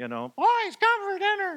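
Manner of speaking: little voice. Recalling how the boys were called in for dinner, in a little voice. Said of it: "that little voice".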